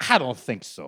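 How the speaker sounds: Dominican-accented English. Joking with the others about kink shaming: put-on Dominican accent. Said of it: "He turned Dominican".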